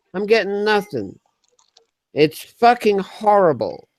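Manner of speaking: put-on American accent. Complaining about getting nothing from the YouTube chat: put-on American accent. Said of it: "I'm talking in a fucking American accent".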